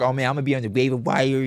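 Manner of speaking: mock boastful bragging tone. Retelling a league mate's boasting before the draft, imitating a friend bragging.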